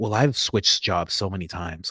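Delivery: soft, low, musing inner voice. Acting out the soft voice in one's head during a laughing conversation, soft inner voice. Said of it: "like soft voice is like".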